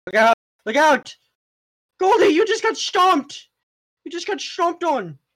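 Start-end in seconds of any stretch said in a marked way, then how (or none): 1.9-5.1 put-on British accent, high and sudden. Telling a teammate mid-fight they just got stomped, in a sudden british accent. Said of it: "Why do you sound British now?".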